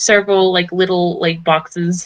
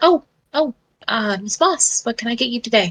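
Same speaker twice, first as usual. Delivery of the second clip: put-on flustered, startled, pitched-up shop girl voice; 5 semitones higher, 4 dB quieter than usual. Voicing a shop girl who looks up from her book with a start: startled shop girl voice. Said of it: "looks up from her book with a start and goes".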